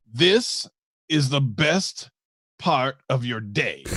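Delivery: each word stretched out, very slow, drawn-out delivery. Telling the other person something he needs them to understand: very, very slowly. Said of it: "when I say this very, very, very slowly for you".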